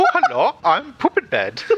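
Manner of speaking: put-on Scandinavian children's character voice. After saying a phrase sounds like a children's character, the speaker performs it: Scandinavian children's character voice. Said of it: "It sounds like a Scandinavian children's character".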